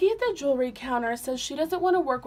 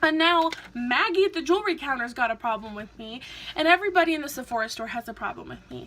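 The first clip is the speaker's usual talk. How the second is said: plain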